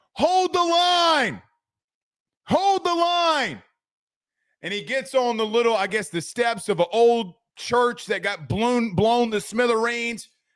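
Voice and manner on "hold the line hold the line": play-acted, high, long drawn-out battle-cry scream. Retelling a movie scene where he runs with the flag as the militia retreats, imitating Mel Gibson screaming. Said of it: "starts running and starts screaming".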